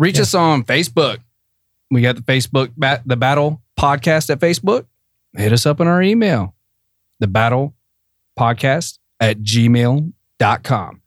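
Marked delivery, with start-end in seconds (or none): 7.2-10.9 spoken slowly, at a slow pace. A podcast host gives the show's email address to listeners, said slowly. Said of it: "I say that slow".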